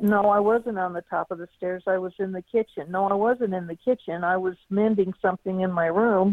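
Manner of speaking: ordinary talk, nothing marked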